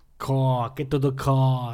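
attempted, put-on Boston accent. Discussing regional accents, trying one out: attempted Boston accent. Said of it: "I don't know what Boston".

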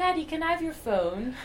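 put-on child's British accent. A father quotes his son, imitating the son's British accent. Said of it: "Like this".

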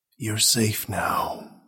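hushed whispering. Reading a story, a man speaks to his wife in the attic, whispered. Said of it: "he whispered".

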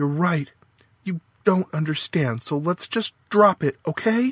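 curt, cutting, sharp, high-pitched tone. Faith cuts off a disagreement with Frank, said sharply. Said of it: "Sharply, Faith said".

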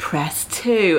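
put-on calm robotic phone-menu voice. Complaining about automated phone lines, imitating the menu in a peaceful robotic voice. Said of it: "peaceful robotic voice going".

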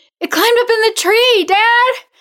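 very high, very loud screeching shriek. Calling to her dad about the creature in the tree, shrieking. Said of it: "she shrieked".

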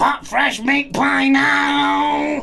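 very high shrill monotone robot shout, now drawn out. Describing ordering a meat pie at a counter at night, shouted robot voice. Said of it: "in your best robot voice".

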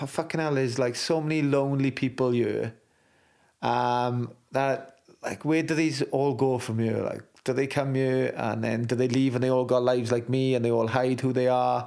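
normal talking voice

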